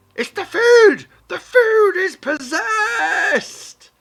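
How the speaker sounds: shrill, booming, drawn-out goblin shriek, very high, very loud. Voicing a goblin charging out of a tent: goblin screaming and shouting. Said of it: "he starts screaming and shouting".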